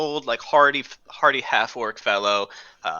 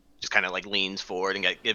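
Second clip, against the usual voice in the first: usual speaking voice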